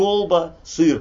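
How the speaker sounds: kolba and syr each stressed high and loud.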